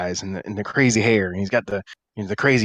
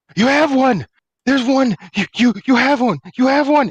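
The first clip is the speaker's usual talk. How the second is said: panicked screaming madman, much higher, louder; 6 dB louder than usual. A man in the scene freaks out on seeing someone: panicked screaming madman. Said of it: "And you see he's got the crazy eyes and the crazy hair, / Looks like he's pretty well travel worn. Kind of some torn clothes at his legs and Torn clothes? Torn, not Torin. No. And you see he's got the".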